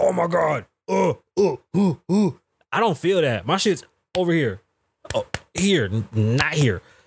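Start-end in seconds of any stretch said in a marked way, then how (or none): 0.0-2.3 slow, drawn-out, exaggerated dramatic gasping. Imitating people having heart attacks on tv: mock heart attack gasping.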